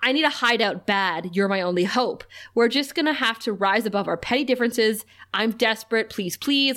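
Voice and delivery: ordinary talk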